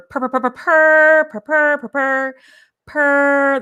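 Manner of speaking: per drawn out in a cat-like purr. Explaining people per square mile to students, saying per like a kitty cat. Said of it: "like a kitty cat".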